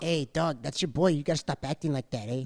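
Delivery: little tiny voice, shrunk way down, soft. Imitating Rey Mysterio scolding the New Day: Rey Mysterio little tiny voice. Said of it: "Mysterio in his little tiny voice".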